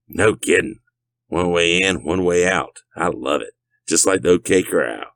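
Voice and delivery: swaggering, self-assured voice. Narrator reading Dirk's reply to Jason, in Dirk's cocky tone. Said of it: "Dirk said in a cocky tone of voice".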